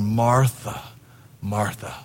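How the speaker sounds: patient, calm, unhurried fatherly voice. Picturing Jesus answering Martha, not frustrated: fatherly Jesus voice. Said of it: "I can just picture him in his fatherly voice going".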